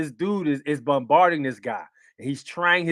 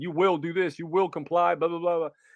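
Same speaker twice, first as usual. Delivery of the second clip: put-on harsh, aggressive bad-cop voice; 2 semitones higher, 3 dB quieter than usual. Retelling how the first cop yelled at a driver: imitating a cop screaming. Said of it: "yelling at him, screaming at him".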